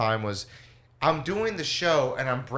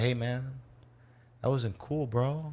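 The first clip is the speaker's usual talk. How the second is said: imitated offended voice, quieter; 6 dB quieter than usual. Retelling how an audience member confronted a comic after the show: imitating an offended audience member. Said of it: "they're like".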